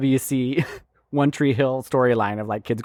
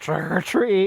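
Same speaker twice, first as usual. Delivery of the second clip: mock drunk speech, pitched higher; 6 semitones higher than usual. Acting out a mom at a party: imitating a drunk mom. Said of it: "She was just so shit-faced drunk".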